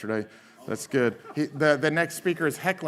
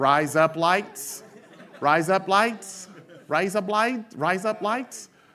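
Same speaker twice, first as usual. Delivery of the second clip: high, put-on Australian accent on "razor blades"; 6 semitones higher than usual. Host showing how Australians hear an American phrase, in an Australian accent. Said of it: "you can just talk with an Australian accent".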